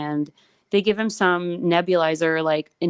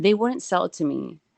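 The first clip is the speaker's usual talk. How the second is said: ordinary delivery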